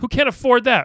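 loud, very high-pitched yelling. Urging listeners to give a buck a month: yelling. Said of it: "now I'm yelling at them".

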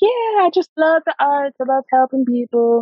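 eager, gushing voice pitched very high. Retelling answering a coworker's question, imitating own past eager voice. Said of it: "I don't know why I'm giving myself this voice".

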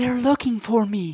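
put-on small, high, childlike little voice. Telling a joke, voicing the child on the phone: imitating a child's little voice. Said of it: "And the little voice says".

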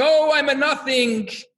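mock high, slow, stretched-out scream. Telling of two yeshiva students late at night in the study hall, imitating a student screaming. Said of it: "And the other one is screaming".

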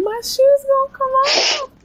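mock shrieking wail, very high and drawn out. Recounting a past moment of being stuck, retelling a scream. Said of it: "So I was screaming".

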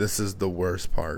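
put-on flat, dead-eyed, deadpan delivery. Retelling a man's line before he goes to the oven: imitating a dead-eyed flat delivery. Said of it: "dead in the eyes".

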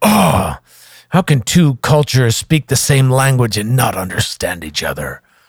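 go-to put-on stage pirate voice. Retelling what an English employer would say, in a put-on pirate voice. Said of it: "he didn't really sound like a pirate".

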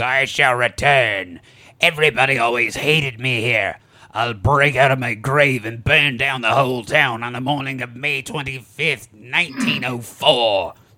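mock-screamed, acted-out screaming. Retelling a drowning woman's last words, retelling a scream. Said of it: "she screams".

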